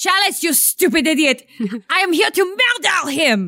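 put-on French accent, laid on thick. In a tabletop game scene, a phony french character turns on another, fake french accent. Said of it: "She's got the coolest accent".

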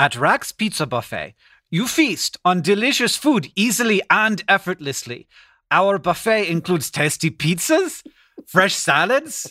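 clumsy, bad, fake German accent. Co-host reads a pizza buffet ad on another take: bad German accent. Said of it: "at your accent at the same time".

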